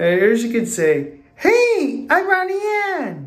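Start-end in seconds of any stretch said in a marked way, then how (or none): 1.3-3.3 put-on cartoon girl voice, much higher pitch. Talking about now liking The Casagrandes, doing a Ronnie Anne impression. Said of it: "I'm done with the Ronnie Ann's impression".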